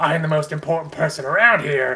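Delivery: pompous, self-important, swaggering boastful tone. Showing how not to act, imitating a pompous boast: mock pompous voice. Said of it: "pompous and puffing out your chest being like".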